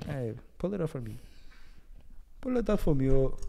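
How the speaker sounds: clumsy, rough put-on Nigerian accent. Speaker tries out the accent they have been working on: Nigerian accent. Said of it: "I've been working on my Nigerian accent".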